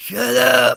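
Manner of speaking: high, loud holler.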